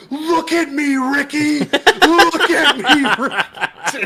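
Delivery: very high, very slow, drawn-out screaming. Retelling how a player screamed across the room at an opponent: imitating Lake screaming. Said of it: "he's just screaming".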